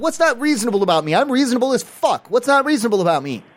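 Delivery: heated, indignant, worked-up swearing outburst. A man argues with a staff member over being called unreasonable, screaming. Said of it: "You're screaming at me".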